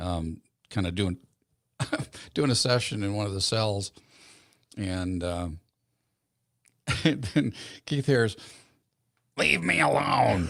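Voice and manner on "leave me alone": put-on high, rough, croaky cartoon old hag voice. Retelling the voice a man heard near the cells, in an old haggy voice. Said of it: "Just a old haggy voice".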